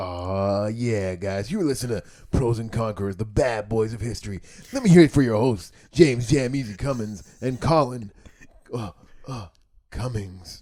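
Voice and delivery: loud, hyped strip club DJ announcer voice. Co-host asks for a stripper DJ voice for the podcast outro; strip club DJ voice. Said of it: "Give me stripper D J voice".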